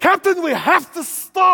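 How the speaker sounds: put-on very loud, high yelling in a Scottish accent. Retelling a scene on the Enterprise, Scotty in Kirk's ear; Scotty's Scottish accent. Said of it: "It's the best Scottish accent I've".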